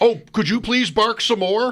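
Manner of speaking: very high-pitched, sarcastic adult voice. Retelling talking to a barking dog: sarcastic dog owner voice. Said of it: "I am so that character".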